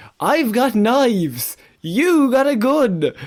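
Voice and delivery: put-on high, very slow, drawn-out yell. Retelling what a man in a video shouted to an officer: imitating a shout. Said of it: "He then shouted".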